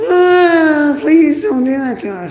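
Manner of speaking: very high, very loud, shrill put-on voice, drawn-out ah. Speaker demonstrating what comes out when going into the high voice. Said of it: "when I go in my high voice".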